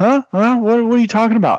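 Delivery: very high, pretend-sleepy, fake-groggy puzzlement. Retelling answering her after pretending to be asleep: pretending to be just woken. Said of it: "I just like pretend I'm asleep".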